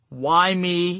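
ordinary talk

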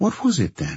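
ordinary delivery

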